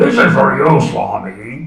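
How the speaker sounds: rough, raspy, gravelly voice. Telling of a man bringing toilet paper to the Swami, in a gravelly voice. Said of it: "in a sort of gravelly voice".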